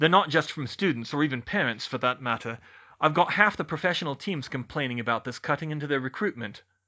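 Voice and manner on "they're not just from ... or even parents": plain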